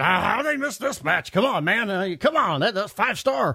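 put-on rural country accent. Impersonating a smart mark fan complaining: put-on redneck accent. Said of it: "You were doing like the smart mark, who was also kind of a redneck".

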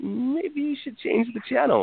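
high-pitched, slow, gentle voice.

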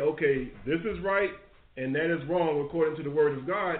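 usual speaking voice

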